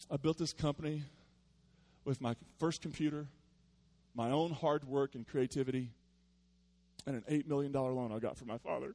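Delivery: almost teary-eyed, near-tearful voice. Quoting a company founder about building his company, the speaker mimics him almost teary-eyed. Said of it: "He's almost teary-eyed".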